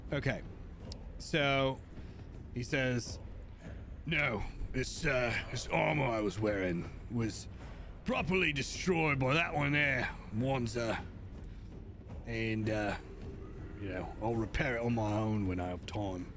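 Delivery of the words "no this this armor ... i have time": put-on orc character voice with slight British accent. Voicing a canonical Warhammer orc speaking about his armor, orc with British accent. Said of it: "he's got to have a little bit of a British accent going here".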